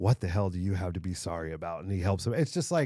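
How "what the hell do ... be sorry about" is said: put-on, tearful, movie-style voice. Retelling a movie scene, imitating Paul Giamatti near tears. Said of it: "Paul Giamatti's almost in tears".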